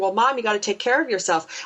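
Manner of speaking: ordinary talk, nothing marked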